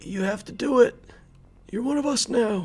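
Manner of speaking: put-on elderly man's voice. Narrating a game, voicing a character's order, in an old man voice. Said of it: "Hera sounded suddenly like an old man".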